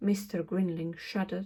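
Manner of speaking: plain reading voice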